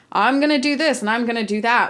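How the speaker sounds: normal talking voice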